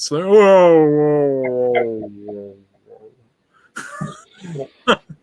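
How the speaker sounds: very slow, dragged-out, drawn-out slow-motion voice. Imitating the other speaker's laugh as if it were slowing down: imitating slowed-down audio. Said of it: "It sounded like you were slowing down".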